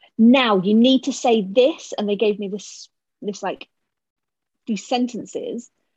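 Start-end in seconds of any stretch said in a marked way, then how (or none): 0.2-2.0 mock shouting, higher and louder. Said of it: "so this is shouting again".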